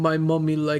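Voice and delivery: put-on voice with a Russian accent. Voicing a character's reply in a tabletop game: Russian accent. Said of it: "I'm trying to not to be Russian".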